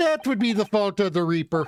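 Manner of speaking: attempted Irish accent sliding toward a Canadian accent. In an acted scene, answering a question about a lawyer, attempted Irish accent. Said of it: "my attempted Irish accent is steadily slipping into Canadian".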